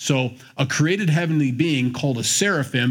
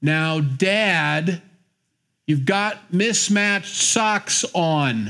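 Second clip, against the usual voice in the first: condescending tone with drawn-out words; 4 semitones higher than usual. Acting out someone talking down to their elderly dad: mock-condescending to a parent. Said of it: "A little condescending to their parents".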